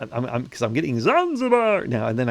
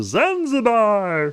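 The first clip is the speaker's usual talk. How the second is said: very high goofy silly voice; 10 semitones higher, 4 dB louder than usual. Showing how to say a word to strangers: funny voice. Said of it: "with a funny voice".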